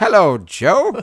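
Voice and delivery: very high, very loud character voice. Joking about Winnie the Pooh, sounding like Jar Jar Binks. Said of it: "Sound like Jar Jar Binks".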